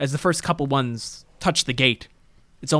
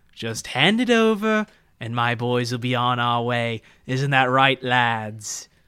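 haughty, snooty, snobbish voice. Voicing a villain calling from outside a house: snooty, snobbish voice. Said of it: "a snooty, snobbish, and familiar voice".

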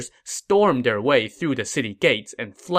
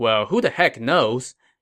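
ordinary delivery

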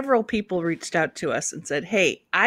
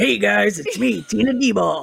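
put-on rough-toned voice; 4 dB louder than usual. Imitating a local comedian introducing herself: imitating tina. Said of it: "Tina's like this".

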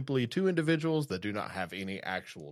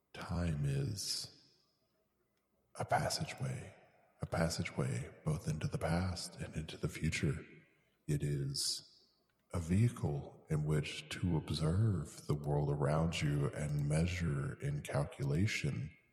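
put-on lofty, low, pretentious philosopher voice; 6 semitones lower, 4 dB quieter than usual. Doing a bit about becoming self-aware, musing on time: put-on pretentious philosophical tone. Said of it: "try to make myself sound as smart as I possibly can".

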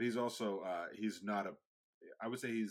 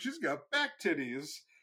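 loud, high, carrying blurted voice; 8 semitones higher, 6 dB louder than usual. Recounting what a man loudly said about a woman's dress: imitating a man speaking loudly. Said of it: "so loud".

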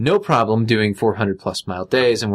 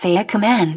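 shrill, very high computer voice; 10 semitones higher than usual. Playing a voice-command system prompting for a command, imitating a computer voice. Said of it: "imitate a computer voice".

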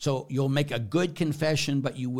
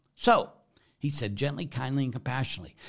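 usual speaking voice

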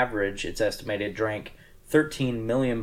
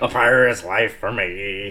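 loud, put-on arr-style pirate voice; 5 dB louder than usual. Speakers take turns trying out pirate lines, in a pirate voice. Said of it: "in Arr pirate".

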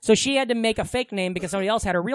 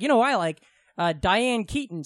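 usual speaking voice

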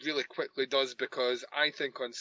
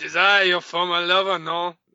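bad French accent, louder, higher; 5 semitones higher, 10 dB louder than usual. Retelling a scene, playing Catherine, bad French accent. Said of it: "All of a sudden, she's dressed like Jacques Renaud".

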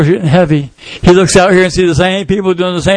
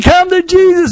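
acted pleading voice, pitched higher; 11 semitones higher than usual. Acting out a woman urging people to come to Jesus: imitating someone pleading. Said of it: "And she's pleading".

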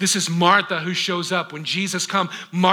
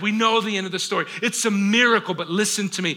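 normal talking voice

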